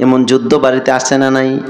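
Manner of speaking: ordinary talk, nothing marked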